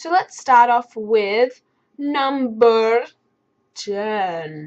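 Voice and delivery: very slow, strange, weird voice, "ten" stretched out. Starting a countdown of favorite gaming moments: weird voice. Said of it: "That was a weird voice".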